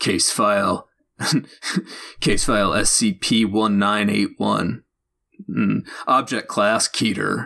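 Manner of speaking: stern, G-Man-like government-agent narrator voice. Describing an SCP story narrator, imitating his G-Man-like narrator voice. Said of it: "the male voice has very much like a G-Man voice".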